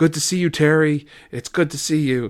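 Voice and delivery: play-acted, high, called-out crowd member yell. Retelling what a fan yelled at a match: imitating a fan yelling. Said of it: "you can hear a fan yelling".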